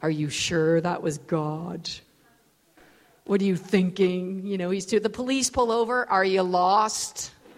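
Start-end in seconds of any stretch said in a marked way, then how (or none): 0.0-4.5 low, motherly voice. Crossing the street with a baby, the speaker imitates mom's voice. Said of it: "my mom's voice just comes into my head going".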